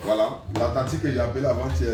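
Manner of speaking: ordinary delivery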